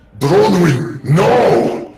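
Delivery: booming, very loud werebear monster voice at full volume. Narrating Sorith's turn, the storyteller voices his cry in a deep, bassy werebear voice. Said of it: "in his deep, bassy, werebear voice say".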